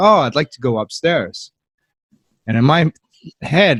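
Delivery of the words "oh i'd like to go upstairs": ordinary talk, nothing marked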